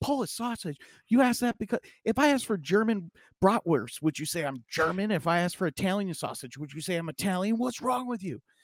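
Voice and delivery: furious, irate, very high-pitched outburst. Telling a joke, playing the man who becomes irate at the clerk. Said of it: "the man becomes irate".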